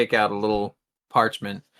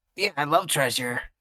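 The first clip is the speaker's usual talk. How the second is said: soft, half-whispered; 4 semitones higher, 3 dB quieter than usual. In a tabletop game, half-whispering back to a bound captive: half-whispering. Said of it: "I'll whisper back".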